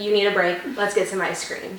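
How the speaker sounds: ordinary delivery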